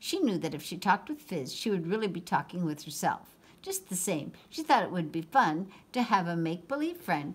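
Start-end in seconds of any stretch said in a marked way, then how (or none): none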